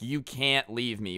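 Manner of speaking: plain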